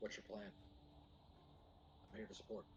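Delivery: quiet whisper.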